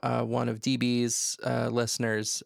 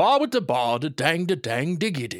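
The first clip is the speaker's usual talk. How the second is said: refined, grown-up sitcom-lead style voice; 3 semitones higher than usual. Co-host tries saying a baby phrase like an adult, in a Frasier voice. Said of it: "say it with a Frasier voice".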